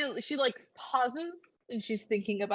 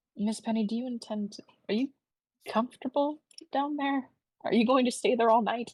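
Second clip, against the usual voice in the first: put-on quiet whisper. Speaking in character to someone hiding under the bed: whispering in character. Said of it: "she's whispering".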